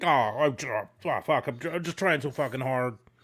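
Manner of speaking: stumbling, halting speech, restarting. Acting out the lines a wrestler would say in a match: imitating Sandman. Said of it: "It's like".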